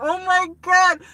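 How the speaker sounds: put-on very high, loud, happy tearful outburst. Retelling a first visit to Yankee Stadium, reenacting happy tears. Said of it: "happy tears".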